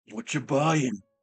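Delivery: put-on snorting, spitting butcher voice. Describing a game butcher chopping up gnomes, doing the Resident Evil 4 gnome seller voice. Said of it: "he just like snorts and then spits like".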